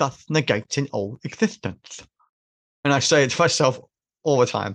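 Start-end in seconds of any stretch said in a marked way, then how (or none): 0.0-2.0 put-on accented delivery, lisping through every s sound. Quoting a line from a film, imitating Alan Rickman's lisp and accent. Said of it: "his lisp and his accent".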